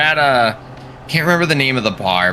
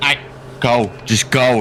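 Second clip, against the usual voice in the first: ordinary talk, nothing marked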